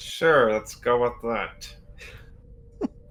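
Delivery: strained, forced tone spoken through gritted, clenched teeth. Ted goes along with the invitation, saying it through clenched teeth. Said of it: "Ted is saying all this through clenched teeth".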